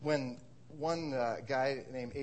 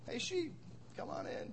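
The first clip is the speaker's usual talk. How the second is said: calm, soft voice, barely raised. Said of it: "raising his voice only slightly".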